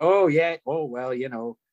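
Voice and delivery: put-on Minnesotan, upper Midwest accent. Speaker shows how he talks after a couple of beers: minnesota accent. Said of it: "I'll start like".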